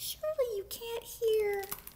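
put-on teeniest possible, very high voice. Narrator reads a character speaking from the closet's farthest corner; tiniest possible voice. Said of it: "said in the tiniest possible voice".

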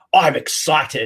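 put-on excited TV pitchman voice. Quoting a famous television catchphrase: Big Kev impression. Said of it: "I'm just sounding like Big Kev".

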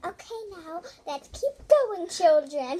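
put-on, very loud, high, talking-down babying voice. Teasing the other speaker about babying the camera: imitating babying the camera. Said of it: "Don't baby the camera. You're like".

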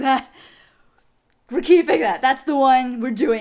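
mock out-of-breath voice. Retelling the director's reaction to a recorded take: imitating Sean Gann out of breath. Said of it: "he was completely out of breath".

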